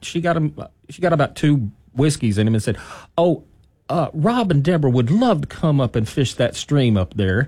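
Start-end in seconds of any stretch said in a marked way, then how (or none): 3.2-7.5 heavy, very strong put-on West Texas accent. Retelling the great aunt asking the rancher about fishing: west texas accent. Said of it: "very, very West Texas accent".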